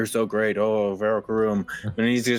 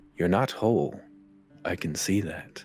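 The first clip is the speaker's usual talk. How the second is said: hushed, private whisper; 3 semitones lower, 3 dB quieter than usual. Voicing a character as the player walks away, whispering so only they hear. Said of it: "he's going to whisper that only you can hear".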